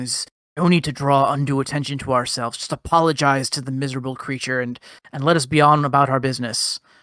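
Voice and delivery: hushed whisper in a put-on character voice. Voicing a robed figure whispering to a companion: whispering in character. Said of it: "is whispering".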